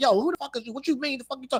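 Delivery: very high, in-your-face bully voice. Retelling how a person curses at someone in a clip: imitating someone talking like a bully. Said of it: "He's talking like a bully now".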